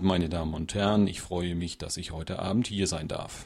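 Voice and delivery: flat, cheerless, even delivery. Quoting a man reading his welcome off a card: imitating a flat, joyless reading. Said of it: "sie war nicht in der Stimme drin".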